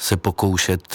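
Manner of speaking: ordinary talk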